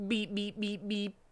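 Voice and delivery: soft, high, beeping robotic voice. Narrator reading a story aloud, voicing the car, in a robot voice. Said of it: "said the car in a robot voice".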